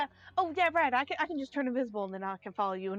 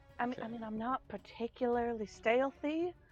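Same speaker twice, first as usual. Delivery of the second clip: soft, hushed, barely sneaky undertone; 4 dB quieter than usual. Answering the group in character about being stealthy: hushed voice. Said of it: "she says in, like, in, like, a hushed voice".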